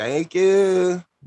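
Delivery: phony, high-pitched, put-on woman's voice. Retelling how she answered on her birthday: imitating a woman's fake voice. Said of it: "Fake ass voice".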